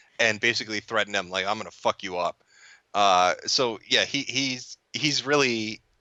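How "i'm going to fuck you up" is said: normal talking voice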